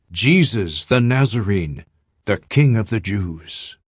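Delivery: ordinary delivery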